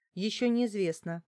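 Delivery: plain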